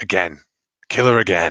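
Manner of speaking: put-on whisper. Voicing Grandfather urging another kill: whispering as Grandfather. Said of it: "Grandfather whispers".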